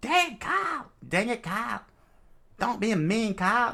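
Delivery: high cartoon voice. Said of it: "She gets Cartman's voice".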